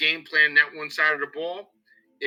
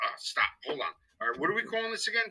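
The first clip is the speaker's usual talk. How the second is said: high, bumbling voice, fumbling and tripping over words; 5 semitones higher, 7 dB quieter than usual. Retelling a podcast take where the coach stumbles: imitating Coach Davis bumbling words. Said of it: "Coach Davis bumbles his words".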